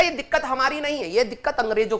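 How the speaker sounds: ordinary talk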